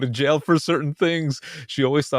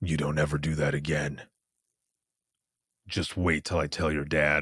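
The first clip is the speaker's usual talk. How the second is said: voice dropped very low; 9 semitones lower, 6 dB quieter than usual. Quoting the speaker's mom, voice put on very deep. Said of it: "like her voice went down that deep".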